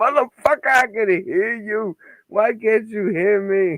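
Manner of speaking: shrill, very high, stretched-out, drawn-out screaming. Imitating a lagging participant who can't be heard: imitating someone screaming. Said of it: "He's sitting back there screaming like".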